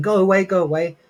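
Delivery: put-on high-pitched screaming woman voice. Retelling how a woman screamed when they knocked on her door, imitating her screaming. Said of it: "she's screaming".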